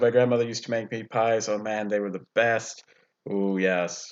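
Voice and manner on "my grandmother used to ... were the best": plain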